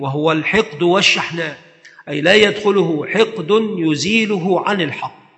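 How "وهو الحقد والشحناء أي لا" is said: usual speaking voice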